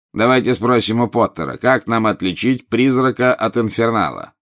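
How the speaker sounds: plain reading voice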